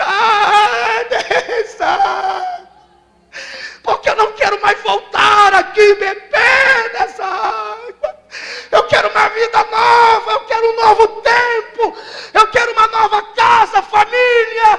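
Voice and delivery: high, slow, sobbing crying shout.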